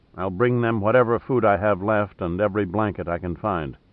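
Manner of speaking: usual speaking voice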